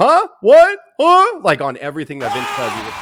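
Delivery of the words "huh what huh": shrill, very loud, high-pitched announcer voice. Retelling how Vince sounded on commentary: imitating Vince's high announcer voice. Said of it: "Vince's announcer voice".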